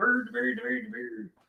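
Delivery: Swedish-sounding gibberish of repeated nonsense syllables. Showing how the Swedish Chef throws ingredients: Swedish Chef voice. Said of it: "That's pretty damn good Swedish Chef".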